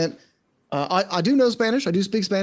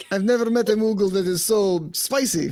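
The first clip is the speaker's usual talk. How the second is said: fake, mock Spanish accent; 3 semitones higher than usual. Role-playing with a Moogle character, speaking in a fake Spanish accent. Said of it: "your fake Spanish accent".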